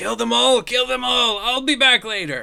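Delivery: very high, very loud, shrill infernal devil shout. Voicing a devil who shouts at his minions while fleeing: devil shouting. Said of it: "he just shouts".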